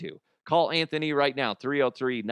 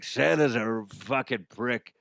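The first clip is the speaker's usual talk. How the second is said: cigar-in-mouth voice, slower. Performing the disgruntled elf character complaining, Frank the elf cigar voice. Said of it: "sounded like I had a cigar in my mouth".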